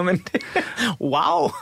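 speaking through laughter. Reacting to another speaker's anecdote about their mother: laughing while talking. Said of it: "undskyld, jeg griner".

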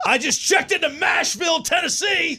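high, celebratory yelled whoop.

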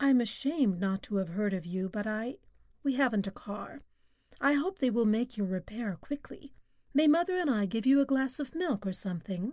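plain reading voice

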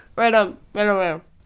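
talking while eating, mouth full. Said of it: "It definitely matters that I'm eating".

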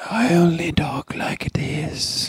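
odd mock whispering voice. Mocking an actor's weird whispering way of talking: Eddie Redmayne whispering impression. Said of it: "this weird, like, whispering thing".

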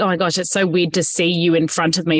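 plain

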